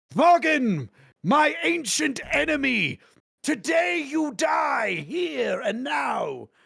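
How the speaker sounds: very high, rough, slow, creaky demon voice. Voicing a fiend who threatens his ancient enemy: pit fiend's voice. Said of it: "And he goes".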